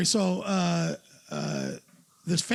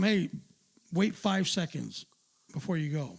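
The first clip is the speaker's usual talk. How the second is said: plain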